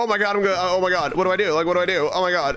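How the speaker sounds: panicked voice. Gamer facing an order never seen before, panicking. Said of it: "because I'm panicking now".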